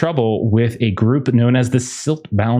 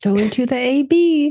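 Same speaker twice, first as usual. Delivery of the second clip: sweet tone, pitched higher. Repeating own earlier way of saying the place name: imitating own sweet tone. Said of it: "It's just such a different tone".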